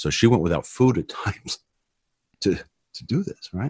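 choked up, close to tears, halting, breaking. Telling a personal story to another speaker, tearing up. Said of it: "I'm tearing up here".

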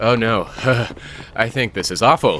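fake, put-on breathless, out-of-breath voice. Asked whether they like running, answering while faking being out of breath. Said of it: "You're faking being out of breath".

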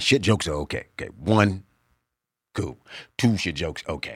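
low, deep, thick voice. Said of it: "this deep, thick voice".

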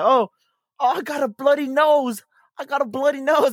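very high-pitched put-on English accent. Retelling a TikTok of someone impersonating an English person: imitating an English accent. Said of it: "impersonate, uh, someone that, from England".

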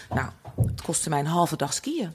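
soft, mock dead-serious deadpan, no sarcasm. Retelling a woman's answer to a question, acting it out deadpan without laughing. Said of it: "zei ze gewoon serieus, strak... zonder gewoon een lach of sarcasme".

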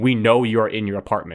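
normal talking voice

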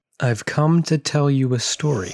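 spooky, eerie ghost character voice. Retelling how someone opened a story speaking as a ghost: ghostly apparition voice. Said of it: "as this ghostly apparition".

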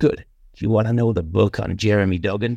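put-on American accent. Retelling a phone call from John: American accent imitating John McMahon. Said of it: "when I do an American accent, it's always a John McMahon accent".

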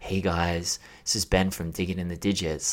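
mock flat, lifeless, energyless host voice. Mocking own old podcast intros, in a mock-lifeless podcast voice. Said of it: "can you please put some fucking energy into your voice? You sound like you're fucking dead".

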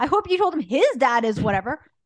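angry and loud.

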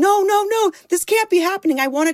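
shrill, very high-pitched scream. Recalling when their internet went out with a friend there, retelling a scream. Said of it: "I'm screaming".

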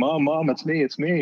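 high, put-on child-like screaming call. Retelling a son being put in a headlock: imitating a child screaming. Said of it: "he's screaming".

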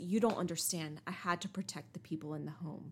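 ordinary talk, nothing marked

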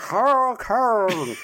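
mock yelling through gritted teeth. Retelling a movie scene where a character yells: imitating yelling through her teeth. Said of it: "she's yelling through her teeth the entire time".

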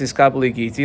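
plain

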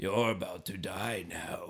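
creepy, very deep, slow, guttural zombie voice. Retelling a movie scene where a zombie threatens a doctor: imitating creepy guttural zombie voice. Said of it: "very creepy and guttural".

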